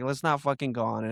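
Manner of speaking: imitated angry tone. Retelling what a friend said before a ride: imitating someone angry. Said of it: "she was mad".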